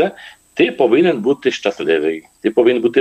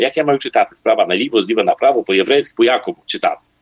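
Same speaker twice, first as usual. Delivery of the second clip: ordinary talk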